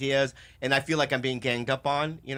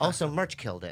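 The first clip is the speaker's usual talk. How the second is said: sickly, worn-out, tired voice. Acting out the listener's texts sent while sick in bed, imitating the listener's voice. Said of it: "Why did you make that his voice?".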